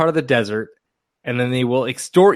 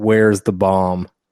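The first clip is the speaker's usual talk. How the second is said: low, dead-straight deadpan delivery; 5 semitones lower than usual. Speaker retells a guard at the Giza Plateau questioning him, imitating a deadpan guard.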